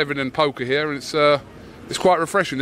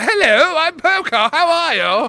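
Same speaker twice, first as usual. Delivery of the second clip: exaggerated put-on British accent, very high; 12 semitones higher, 5 dB louder than usual. Talking to Poca about how she goes over the top, doing an over-the-top imitation of Poca. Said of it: "you know when you really go over the top".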